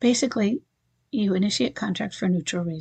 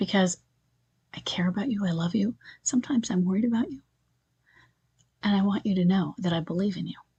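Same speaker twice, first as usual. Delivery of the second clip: soft, gentle, caring late-night radio DJ voice. Speaker demonstrates the tone for listeners, in a late-night DJ voice. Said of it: "all of that was said with what Chris Voss".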